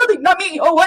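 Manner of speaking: very high, fumbling, flustered, guilty-sounding, acted out. Retelling a character caught with poison in the park: acting out a flustered denial. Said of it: "that's not fucking suspicious at all".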